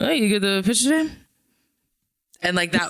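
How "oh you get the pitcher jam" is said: half-swallowed, pitched-up mumbling aside. Retelling how a man mumbled to baseball players at a game: imitating someone mumbling. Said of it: "he was like mumbling to baseball players".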